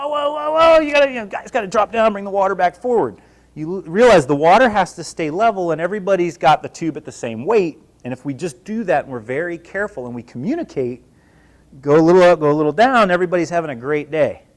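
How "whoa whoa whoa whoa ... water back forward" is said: mock, high-pitched screaming. Retelling getting crushed under a water tube in training: imitating screaming. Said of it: "you start screaming like".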